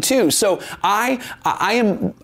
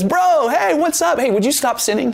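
put-on breezy, teasing, folksy sarcasm, pitched up; 6 semitones higher than usual. Acting out Jesus teasing a healed man: imitating Jesus being sarcastic. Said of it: "I think he's being sarcastic here".

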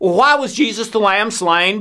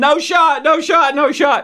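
put-on high, screaming, crying little kid's voice; 6 semitones higher than usual. Retelling how he kept screaming at the clinic: imitating a child screaming. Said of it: "just screaming".

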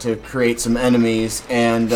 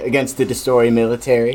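ordinary talk

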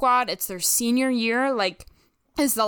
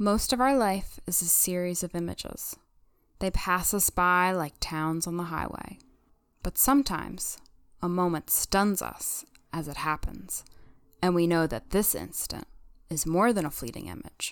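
earnest, theatrical, dramatic voiceover-style narration; 4 semitones lower, 5 dB quieter than usual. Performing a dramatic reading of a Lucas voiceover after being asked: dramatic reading of Lucas voiceover. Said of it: "do a dramatic reading of it".

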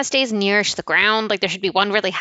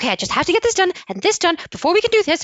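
mock anxious, overwhelmed voice, much higher; 9 semitones higher than usual. Showing how they talk when anxious and overwhelmed, imitating own anxious voice. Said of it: "I get higher".

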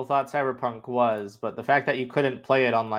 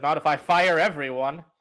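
normal talking voice

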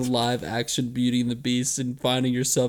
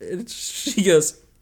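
plain

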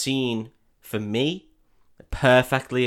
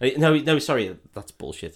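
normal talking voice

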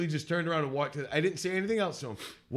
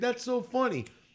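put-on British accent, pitched up higher; 8 semitones higher than usual. Retelling what a laughing girl at a water fountain said: imitating a british accent. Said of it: "she said it in this British accent".

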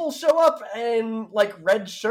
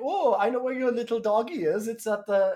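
clearly off, bad, put-on French accent. Retelling how Gertrude called her about the dog, in Gertrude's weird French accent. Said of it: "called her in a weird French accent".

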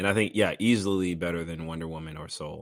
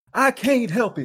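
energetic, very loud, high, slow belting; 9 dB louder than usual. Taking a turn doing impressions: Muhammad Ali impression. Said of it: "Muhammad Ali was".

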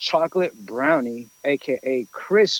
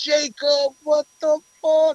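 very high, shocked, drawn-out shriek. Retelling a moment in a bowling alley: imitating own screaming. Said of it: "I'm screaming in the bowling alley".

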